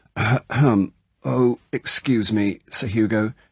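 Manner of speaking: slow, choked, strangled voice. A narrator reads a fidgeting woman's line to the driver, strangled voice. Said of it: "she said in a strangled voice".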